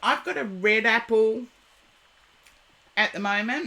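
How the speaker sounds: speaking while chewing, mouth full. Speaker eating an apple mid-talk, talking with mouth full. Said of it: "talking with my mouth full".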